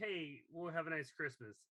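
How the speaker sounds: normal talking voice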